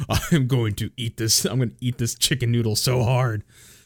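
put-on angry grumble with slurping sounds.

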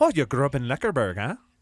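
put-on Irish accent, tossed-off delivery. Joking that a made-up name sounds like an irish city: irish accent. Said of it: "I forgot I'd do an Irish accent".

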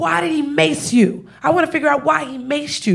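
play-acted, pissed-off, demanding cop voice. Retelling a cop pacing back and forth: imitating an angry cop. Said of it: "He's pissed".

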